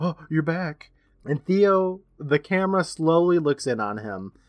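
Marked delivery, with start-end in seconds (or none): 0.0-0.9 put-on gasp. Retelling a scene where Theo comes home, imitating Hagstead gasping. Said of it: "Hagstead's all gasping".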